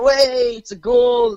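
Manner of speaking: very loud, dragged-out, high scream. Retelling how a friend reacted at a coin find: imitating someone screaming.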